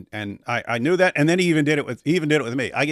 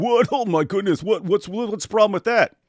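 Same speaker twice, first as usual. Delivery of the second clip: high, squealed mock shock, then indifferent shrug. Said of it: "And you're going".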